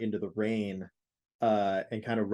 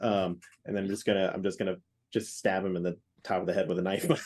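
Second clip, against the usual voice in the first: ordinary talk, nothing marked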